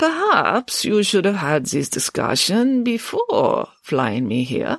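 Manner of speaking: put-on slow, drawn-out, quavering, wavering old voice. Professor Abernathy speaks for the first time, in a slow, quavering elderly voice. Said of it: "spoke slowly and with a quavering voice distinctive of the elderly".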